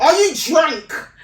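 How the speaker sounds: loud, accusing shout.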